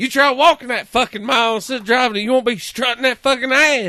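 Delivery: mock drunk ranting, pitched very high. Retelling a news interview with a man who was drunk: imitating a drunk man. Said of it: "He's all fucking drunk".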